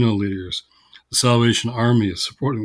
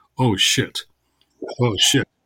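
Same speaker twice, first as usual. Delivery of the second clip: mock muttering under the breath, slower. Speaker retells the woman next in line to speak; retelling a muttered aside. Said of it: "quietly, under her breath".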